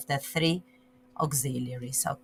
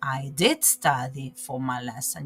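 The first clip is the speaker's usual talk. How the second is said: did stressed hard for emphasis; 6 semitones lower, 3 dB quieter than usual. Teaching a different intonation in speaking: strong stress on did. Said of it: "you will l- use a different intonation. ... You stress on that".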